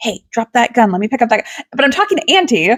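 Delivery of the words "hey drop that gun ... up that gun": acted whispering. Recounting a game, the speaker quotes someone whispering to her during a call: retelling a whisper. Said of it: "Blaine's trying to like whisper to me".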